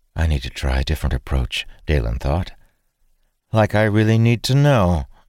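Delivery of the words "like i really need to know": patronizing, condescending, offhand and dismissive tone. Dalen answers Jenna as he turns away from her; condescending. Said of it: "Dalen said condescendingly".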